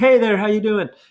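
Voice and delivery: high-pitched calling out, as if to someone far off. Speaker demonstrates medium-loud volume as a greeting across the street, shouting.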